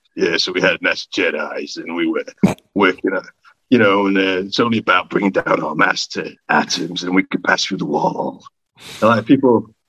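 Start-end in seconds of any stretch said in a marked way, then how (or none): 0.2-8.5 put-on cool, low-pitched American accent. Describing a character in a NASA T-shirt, the speaker does a cool American accent. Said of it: "with a cool American voice who".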